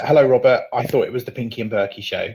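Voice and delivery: ordinary talk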